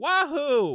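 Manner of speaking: lifeless, weak, high-pitched cheer of wahoo. Retelling how the trailer's Mario cheer sounded: flat Chris Pratt Mario "wahoo". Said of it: "flat and terrible".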